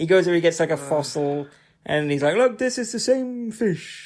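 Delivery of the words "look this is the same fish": big, pitched-up, put-on cartoon bear voice. Retelling a film scene, imitating the fish expert like Yogi Bear. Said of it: "why he sounds like Yogi Bear".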